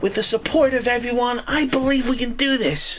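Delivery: very high put-on anime hero voice, pitched right up. Doing an impression of Deku from My Hero Academia: Deku character voice. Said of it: "That's my impression of Deku from My Hero Academia".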